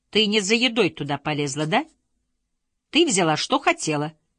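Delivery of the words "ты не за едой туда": usual speaking voice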